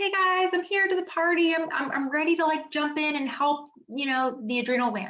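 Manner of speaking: high, eager voice, pitched way up.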